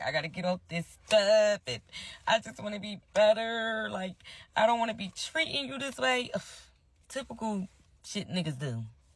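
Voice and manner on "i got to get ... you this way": high, weepy, tearful, begging tone. Retelling how he apologized and promised to do better: imitating someone crying. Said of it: "be crying".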